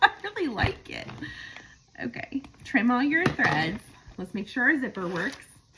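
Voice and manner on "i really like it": high pitch, laughing through the words. Showing a finished sewn bag and its soft feel, laughing while talking. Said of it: "I'm sorry I keep laughing".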